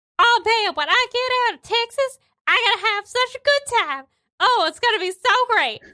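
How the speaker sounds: thrilled, happy, excited, very high and rushed. Narrating a scene, the speaker voices Cutie Carl heard up ahead, excited and happy. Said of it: "Cutie Carl sounds excited. He sounds happy".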